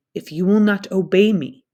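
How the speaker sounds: cold, chilling, low voice. Reading a story aloud, voicing the captain warning the narrator in a low, cold voice. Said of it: "Captain Smith says in a low, cold voice".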